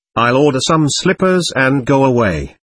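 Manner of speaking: usual speaking voice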